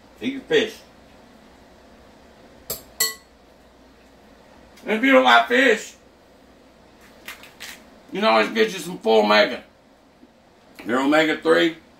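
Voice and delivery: rough, high speech through a mouthful of food. Speaker eating salmon while talking to video viewers, talking while chewing. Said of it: "chewing my mouth open".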